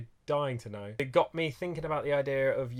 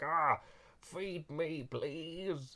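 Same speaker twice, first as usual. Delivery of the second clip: very slow, drawn-out, hungry grumbling stomach voice; 4 semitones higher, 6 dB quieter than usual. Talking about listening to your gut, voicing their own hungry stomach: grumbling stomach voice. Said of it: "that's what my stomach sounds like".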